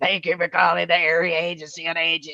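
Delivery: deep, raspy, rattled smoker's voice, rattled off. Recalling a receptionist who was a heavy smoker, doing her deep raspy voice. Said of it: "she had this deep raspy voice".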